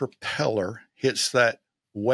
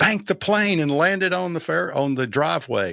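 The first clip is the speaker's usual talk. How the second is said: mock urgent, high-pitched delivery; 5 semitones higher than usual. Retelling a plane crash landing, screaming the order again: retelling his own scream. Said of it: "I screamed at him again".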